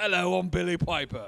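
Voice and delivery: exaggerated, laid-on-thick Cockney accent. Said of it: "I start going into the British accent, like the Cockney, like the strong ... just over the top".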